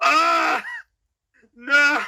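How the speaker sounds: very high, swooping, dismayed cry. Voicing a character as his stomach scares the animal away: Grog's dismayed cry. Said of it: "and he's like".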